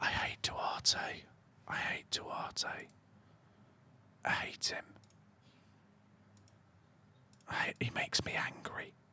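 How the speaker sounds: hushed whisper. Speaker vents about a player while discussing the standings, whispering. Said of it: "I don't know why I'm whispering".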